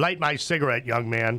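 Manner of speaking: plain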